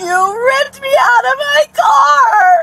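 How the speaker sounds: high, slow, sobbing crying wail.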